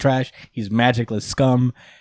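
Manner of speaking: normal talking voice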